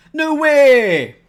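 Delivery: very loud, high, booming call, way held long. Solving a crossword clue aloud, saying it in the style of Chris Ramsey. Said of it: "in the style of Chris Ramsey".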